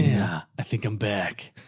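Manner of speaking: flat, low, slow, unhurried one-note cool drawl. Pitching a casting idea, repeating the line in a Keanu Reeves voice. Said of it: "Keanu Reeves doesn't sound that cool".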